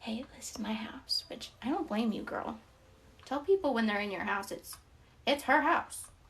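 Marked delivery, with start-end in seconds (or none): 0.0-1.2 whispering, much quieter. Describing a wife who creeps up on people, acting out her line: whispering. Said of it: "she'll like whisper like".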